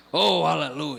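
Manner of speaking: very low, thick, deep preacher voice. Speaker describes the pastor people might expect, in a very deep pastor voice. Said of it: "com a voz bem grossa, dizendo aleluia".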